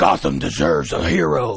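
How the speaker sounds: gravelly, rough, creaky superhero voice. Showing off an impression during a conversation, Batman voice. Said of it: "I do a pretty good Batman".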